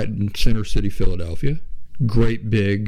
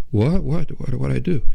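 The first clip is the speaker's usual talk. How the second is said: put-on distress, higher pitch, much slower; 4 semitones higher than usual. Retelling a patient's reaction to the doctor, imitating a distraught patient. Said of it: "the patient was distraught".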